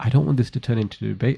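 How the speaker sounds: whispered, hushed voice. Retelling what a guest said to the speaker: imitating someone whispering. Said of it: "he's whispering".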